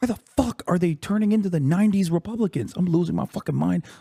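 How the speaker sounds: screaming in a whisper. Ranting to chat, not wanting to wake the neighbor, whisper-screaming. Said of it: "I have to whisper scream".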